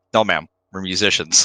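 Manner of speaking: put-on deadpan. Retelling a movie scene where a woman asks about police: imitating Dan Aykroyd's deadpan. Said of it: "The deadpan, the delivery is so good".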